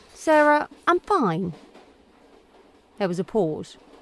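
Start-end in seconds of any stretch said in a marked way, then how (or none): 0.2-1.6 bright, forced cheerful tone, pitched up. Claire pastes on a smile and answers sarah with forced brightness. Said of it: "answered brightly".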